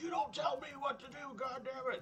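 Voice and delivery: mock angry yelling. Retelling a customer's outburst at a retail worker, retelling an angry yell. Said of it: "And he'd start yelling at him".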